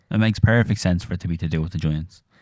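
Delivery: ordinary delivery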